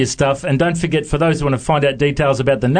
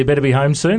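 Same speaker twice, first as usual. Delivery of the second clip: ordinary delivery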